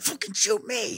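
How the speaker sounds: intense, aggressive, very high daring tone. Retelling a man walking up to a gunman, retelling an intense challenge. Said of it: "in the most intense, I'm going to fight you way".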